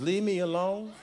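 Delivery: soft, high, small pleading voice. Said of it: "say in your [name] voice".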